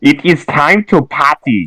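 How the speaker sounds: put-on German accent. Urging someone not to shut the place down, the speaker slips into a German voice. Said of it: "I don't know why I did like a German voice there".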